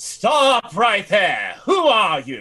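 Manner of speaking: drawn-out, slow, swooping fantasy wizardess voice. Voicing a wizardess who points a glowing wand at intruders: voicing a wizardess. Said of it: "And she goes".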